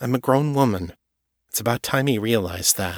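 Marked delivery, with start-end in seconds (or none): none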